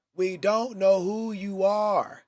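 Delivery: put-on very slow, high, loud, drawn-out little girl scream. Retelling a little girl in the crowd calling out to a player: imitating a girl screaming. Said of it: "this little girl screams out".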